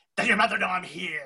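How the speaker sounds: creepy talking-doll voice. Recalling what a talking doll used to say, creepy Cat in the Hat doll voice. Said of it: "it used to say it like that, and it just sounded so creepy".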